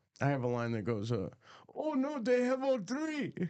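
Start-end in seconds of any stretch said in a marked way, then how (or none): 1.8-3.4 put-on Arabic accent, pitched very high. Demonstrating a line he is still working on, in an arabic accent. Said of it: "That's your Arabic accent?".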